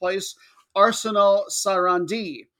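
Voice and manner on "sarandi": Sarandi with stress on last syllable -di. Announcing a matchup, put stress on the last syllable of Sarandi. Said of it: "I'm just trying to get my emphasis on the right syllable there at the end".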